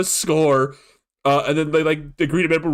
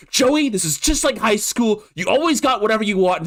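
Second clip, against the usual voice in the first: pitched-up, raised-voice shouting; 6 semitones higher than usual. Retelling a scene where the Gamer Clerk yells at Joey: imitating someone yelling. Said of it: "yelling at him".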